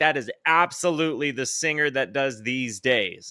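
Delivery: ordinary delivery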